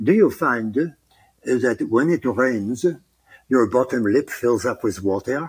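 put-on French accent. Speaker showing the phrase they use to get into a French accent. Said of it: "when I do a French accent".

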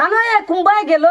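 high, loud calling out across a distance.

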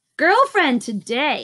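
giddy, excited, high-pitched voice. Narrator reading a character's reply to another character's question, in a giddy voice. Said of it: "Snickers responds in a giddy voice".

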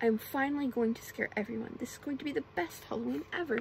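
plain reading voice

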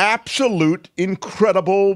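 high, excited, gushing yell. Reacting with the group to a celebrity's yacht, yelling. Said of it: "Why are you yelling?".

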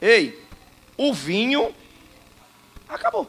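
very quiet, calm, tranquil, hushed and unhurried. Retelling a woman who comes calmly without shouting: acting calm and quiet. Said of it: "Ela vem tranquila e olha para Jesus e diz assim, ó, só assim".

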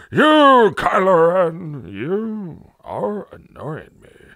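tired, cross, loud, very slow, drawn-out "you". Imitating a villain's voice from a trailer: tired, angry Gandalf voice. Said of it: "tired, angry Gandalf".

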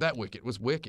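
normal talking voice

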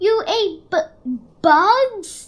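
loud stumbling stammer, bugs drawn out. One of the gathered bats reacts to the young bat's story, stuttering. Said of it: "Stuttered one".

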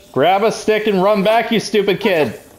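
mock shout.

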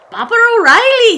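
very high, shrill, loud, off-target bad Irish accent. Trying out an Irish accent the speaker is working on: bad Irish accent. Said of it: "I'm working on my Irish accent".

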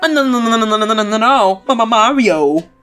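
stammered run of repeated "no". Reading game dialogue aloud, repeating the character's line: Luigi imitation. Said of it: "that's what he says".

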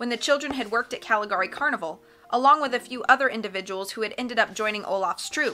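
ordinary delivery, nothing marked

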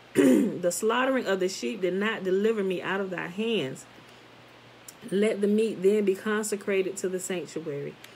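ordinary delivery, nothing marked

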